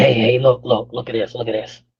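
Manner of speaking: put-on raspy voice. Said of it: "He said".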